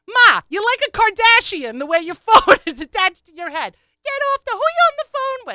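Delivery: very high, shrill, rising yell. Retelling a daughter yelling at her mother in a store: imitating a daughter yelling. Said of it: "She was yelling at her mother".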